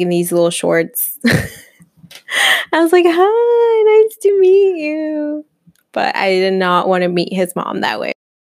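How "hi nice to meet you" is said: very high, awkward, flustered tone.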